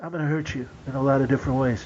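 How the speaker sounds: put-on small, quiet voice. Showing how an actor from a commercial sounds: Steven Seagal little voice. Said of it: "he does have that, like, little voice".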